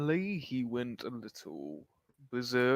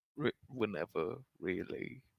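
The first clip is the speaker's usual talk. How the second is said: soft, secretive half-whisper with no voice; 3 semitones lower, 6 dB quieter than usual. Leaning in beside someone nearby to answer quietly: half-whispering. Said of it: "I'm gonna whisper".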